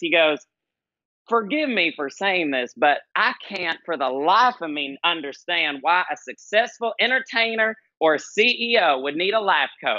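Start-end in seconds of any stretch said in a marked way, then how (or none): 1.3-10.0 put-on kindly, sweet older Southern gentleman's accent. Retelling what an older gentleman driver said to the speaker: imitating a southern voice. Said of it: "he says to me in this southern voice".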